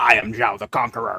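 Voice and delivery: put-on slow, deliberate American accent. Quoting an actor's line as an animated villain: Admiral Zhao voice. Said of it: "he has an American accent in that one where he's like".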